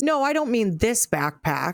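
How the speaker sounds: ordinary talk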